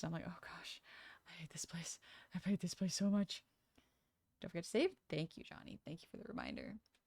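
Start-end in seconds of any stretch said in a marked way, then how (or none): 0.3-3.4 play-acted frantic, panicked, breathy whisper. Retelling own reaction in customer service games: imitating own panicking. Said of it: "I start panicking".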